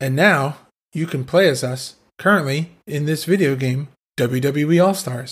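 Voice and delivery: mock flat, dead, bored monotone, no excitement. Imitating a wrestler reading a video game promo line: imitating Shawn Michaels' dead, bored tone. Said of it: "the inflection that I just said that with is the inflection that he says it with".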